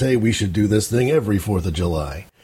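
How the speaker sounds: ordinary delivery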